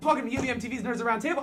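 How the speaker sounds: fast, rushed, excited. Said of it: "I'm talking really fast 'cause I am excited".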